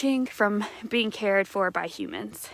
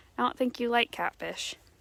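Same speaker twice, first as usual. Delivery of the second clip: ordinary delivery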